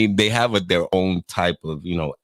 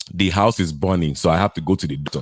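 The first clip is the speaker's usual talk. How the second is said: put-on Nigerian English accent. Comparing how people from different countries talk, imitating a Nigerian accent. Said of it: "This is how a Nigerian talks".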